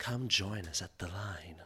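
slow, drawn-out promo announcer advert voice. Retelling a promotional video's advertiser: impersonating a promotional advertiser. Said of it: "that's my impersonation".

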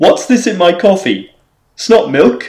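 put-on Cockney accent. Asked to give a film clue in a cockney accent, a player delivers it in cockney accent. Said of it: "why did you have to have the Cockney accent".

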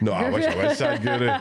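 high, laughing voice, pitched way up.

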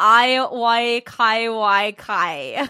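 very slow, very loud, drawn-out reading aloud. Reading out a show's text message as asked: Liberty impression. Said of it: "let you do the Liberty impression of her reading this".

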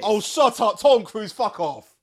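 shrill, very loud, high, aggressive angry outburst. Reacting to news about a movie set in space, an aggressive outburst. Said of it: "That was really aggressive".

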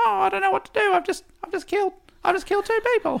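very high, panicked orangutan voice. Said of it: "the orangutan was going".

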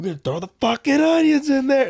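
very high, loud calling voice. Retelling a barbecue chef's video: imitating a chef who sounds like Bill Burr. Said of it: "this chef sounds like Bill Burr because he's like".

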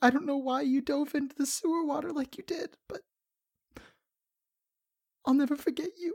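crying creature voice. Narrating a game scene and voicing a grieving kobold, sobbing kobold voice. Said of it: "sobbing quietly in the corner".

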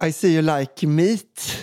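mock Swedish English accent. Retelling what they said to someone in a story, in Swedish-accented English. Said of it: "Jag med svängens brytning".

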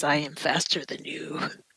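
low, threatening whisper.

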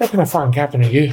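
put-on Irish accent. Retelling what he said to the captain, quoted in an Irish accent. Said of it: "Irish accent".

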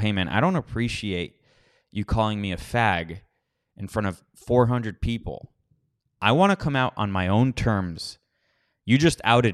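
ordinary talk, nothing marked

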